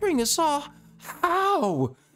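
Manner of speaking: confused, puzzled little terrier dog voice. Voicing a small Boston Terrier prisoner asked about a breakout: confused little terrier dog. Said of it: "he looks legitimately, like, confused".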